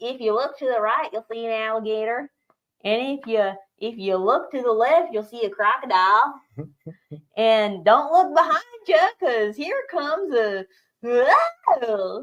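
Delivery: put-on Florida accent. Acting out a swamp buggy tour for the job: put-on Florida cracker accent. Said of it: "they do that whole Florida cracker thing there".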